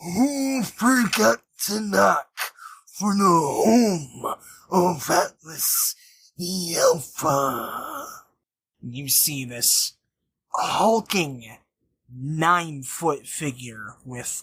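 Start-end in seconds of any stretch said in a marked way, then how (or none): 0.0-8.1 slow, drawn-out, deliberate, high-pitched proclaiming tone. Game master voicing a figure seated on a throne, booming out. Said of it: "And he booms out".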